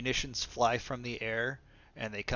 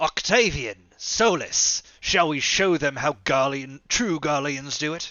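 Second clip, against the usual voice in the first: booming, very loud yell; 4 semitones higher, 13 dB louder than usual. In the game, Xenos calls out to Octavian and Solus: Xenos yelling. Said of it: "Xenos yells out".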